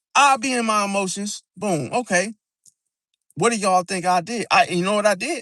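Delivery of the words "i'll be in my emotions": ordinary talk, nothing marked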